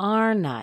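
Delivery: falling intonation, pitch dropping on I in aren't I. Drilling question tags with the intonation going down: falling intonation at the end. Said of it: "Let's let the intonation fall down".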